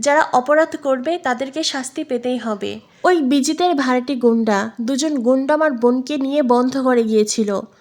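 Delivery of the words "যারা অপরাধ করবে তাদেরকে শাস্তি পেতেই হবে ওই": ordinary delivery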